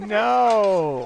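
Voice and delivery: high-pitched, loud, anguished tone.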